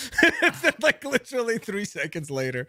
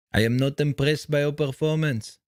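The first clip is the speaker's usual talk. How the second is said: low, dropped, taunting trash-talk voice; 5 semitones lower than usual. Quoting a fighter's famous trash talk line: Georges St-Pierre impression. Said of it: "I was trying to do George St. Pierre voice impersonation".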